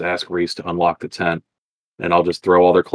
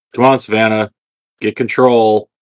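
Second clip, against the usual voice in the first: slow, drawn-out, loud acted yell; 4 semitones higher, 5 dB louder than usual. Voicing a character yelling at Savannah to get control: in-character yell. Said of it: "I'm gonna yell".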